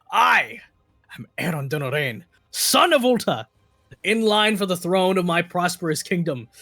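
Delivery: steeled, proud, resolute delivery. Voicing a father teaching his child to face evil: saying proudly. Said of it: "and you say proudly".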